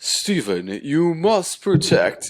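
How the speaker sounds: loud, daunting, high-pitched, intimidating god voice. Describing a tall skeleton bird character from the show: imitating a daunting voice. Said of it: "he had this really daunting voice like this".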